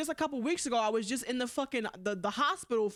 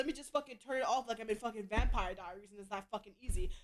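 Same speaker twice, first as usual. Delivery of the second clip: angry, heated, fired-up venting rant; 5 dB quieter than usual. Telling listeners about a past conversation, getting angry, in an angry rant. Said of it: "I'm getting angry just thinking about this. Can y'all tell?".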